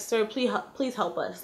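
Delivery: soft, hushed half-whisper under the breath. Retelling a plea to a man for help: retelling a half-whisper. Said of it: "I whispered to him".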